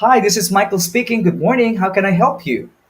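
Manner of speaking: bright, positive voice. Demonstrating a positive way to answer a phone call, positive phone greeting. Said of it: "to a positive way".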